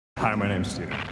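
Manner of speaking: low, deep-voiced delivery. Introducing himself by name to a group asking questions: deep voice. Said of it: "That's a deep voice".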